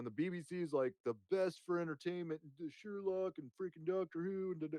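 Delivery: eager, enthusiastic, gushing delivery. Retelling what he once said on a podcast, imitating his own past enthusiasm. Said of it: "impression of myself".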